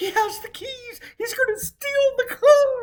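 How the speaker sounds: full-on, shrill, very high, very loud alarmed scream. Retelling a sister-in-law's alarm about car keys: imitating sister-in-law screaming. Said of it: "my sister-in-law comes screaming".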